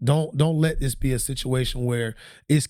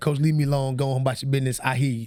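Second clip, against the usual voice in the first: plain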